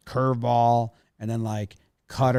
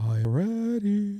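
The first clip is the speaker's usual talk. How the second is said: high put-on silly voice. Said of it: "Don't use that voice".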